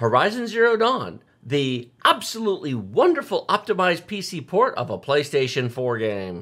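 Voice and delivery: heavily sarcastic, laid-on tone. Quoting the line from own reviews about a pc port: quoting own review line sarcastically. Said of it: "I always say it with a big slash S for sarcasm".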